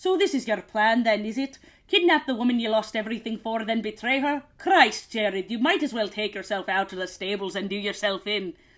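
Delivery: put-on lines read aloud in a Scottish accent. Reading aloud a book character's quote in a scottish accent. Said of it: "this character is written with a Scottish accent".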